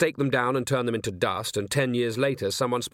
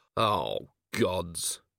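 murmured under the breath, much lower; 5 semitones lower, 4 dB quieter than usual. A man hearing a vampire's speech about free choice, murmured under his breath. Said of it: "murmured Vimes under his breath".

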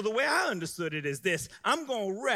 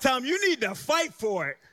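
forceful, punchy, pitched-up delivery with more umph; 7 semitones higher, 5 dB louder than usual. Leading the crowd to repeat after him: more umph in the voice. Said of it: "say it with some more umph in your voice".

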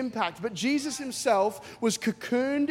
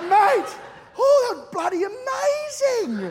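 loud, very high, drawn-out put-on hollered shout; 12 semitones higher, 5 dB louder than usual. Retelling a friend's loud reaction after prayer: imitating someone shouting. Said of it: "He's being loud too".

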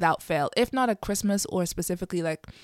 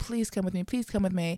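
mock pleading, begging tone; 4 dB quieter than usual. Imitating a mother who begs her adult kids to join her at church: imitating mother begging. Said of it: "she'll be begging and pleading".

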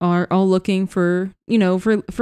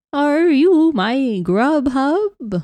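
put-on quavering elderly voice, slower; 7 semitones higher than usual. Narrator voices the resident of apartment 3b over the intercom, quavering elderly voice. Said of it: "you hear just a quavering elderly voice from apartment 3B".

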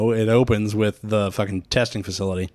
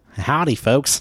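fake Midwestern accent, pitched high; 5 semitones higher than usual. Chatting about which accents they can do, in a put-on Midwestern accent. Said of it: "I can hardly do a fucking Midwestern accent".

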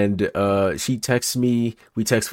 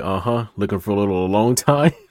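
mock dry, dead-serious deadpan delivery. Retelling what a security guard said when pulling them over: imitating a deadpan remark. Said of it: "he says with a straight face".

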